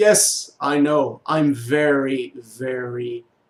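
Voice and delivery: heavy, loud sarcasm, very drawn out. Speaker quotes a man's answer after scolding him for taking three days to move, mock-sarcastic reply. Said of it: "he replied sarcastically".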